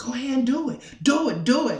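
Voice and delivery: loud, high, sinister egging-on tempter voice. Describing wanting to steal a phone, voicing the evil voice in your head. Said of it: "The evil voice".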